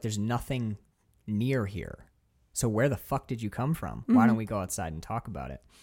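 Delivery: ordinary delivery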